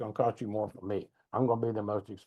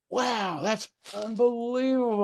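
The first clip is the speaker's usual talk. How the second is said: mock thrilled, high, excited shout of amazement; 12 semitones higher, 3 dB louder than usual. Alone at the top of a stadium, recalling cheering the band: retelling a scream. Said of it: "And I screamed out".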